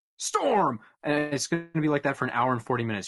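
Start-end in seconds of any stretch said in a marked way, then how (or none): 0.2-0.8 blurted, excited, yelled shout. Showing how scene transitions are done: yelling a scene transition. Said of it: "that's how I do my scene transitions".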